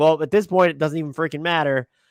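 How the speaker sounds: plain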